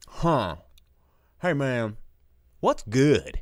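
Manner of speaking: slow, drawn-out, dude-style delivery. Imitating a moviegoer at the theater marquee: What's Good Guy accent. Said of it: "They'll walk up to the marquee and be like".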